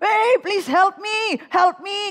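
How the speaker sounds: slow, loud, panicked pleading cry.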